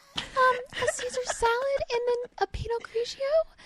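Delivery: mock timid whisper. Imitating mom ordering from a waiter: imitating mom whispering an order. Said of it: "Like she whispers".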